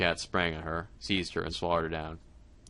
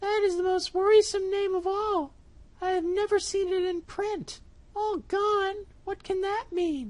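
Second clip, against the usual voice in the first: very high, squeaky, little storybook mouse voice. Reading a fairy tale, the narrator voices the mouse reacting to the cat; the mouse's voice. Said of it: "said the mouse. / Then she shook her head".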